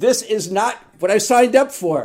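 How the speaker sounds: very high, very loud, shrill yell. Recounting scraping mom's remains out of the box with her sister, retelling her own yell. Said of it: "I'm yelling".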